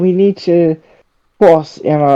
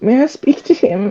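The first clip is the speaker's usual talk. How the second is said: put-on frail German girl voice, pitched up; 8 semitones higher, 4 dB quieter than usual. A visitor asks to speak to the man in his quarters, frail german girl voice. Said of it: "Why do you sound like a frail German girl?".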